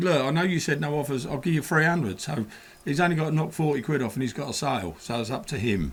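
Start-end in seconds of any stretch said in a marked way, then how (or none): none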